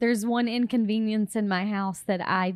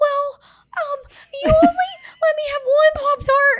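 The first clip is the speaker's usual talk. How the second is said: put-on whiny child voice, higher and louder; 9 dB louder than usual. Imitating a kid complaining on vacation: imitating a whiny kid. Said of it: "Your whiny kid voice is my all-time favorite [name] voice".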